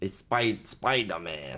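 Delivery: acted elderly man voice. Reminiscing about imagining Spider-Man as a kid: Stan Lee impression. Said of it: "Do you like my Stanley impression?".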